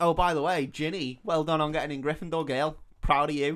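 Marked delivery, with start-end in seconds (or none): none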